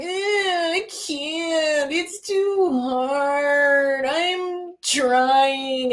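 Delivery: acted, very slow, high whine with long drawn-out I. Retelling the swamp scene where Yoda tells him to lift it: whiny Luke impression. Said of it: "a whiny ass little bitch".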